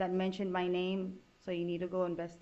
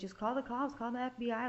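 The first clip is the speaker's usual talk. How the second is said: acted-out screaming at a higher pitch; 4 semitones higher than usual. Explaining how she reacted when Charlie kept on talking, retelling her own screaming. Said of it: "I'm basically screaming at Charlie".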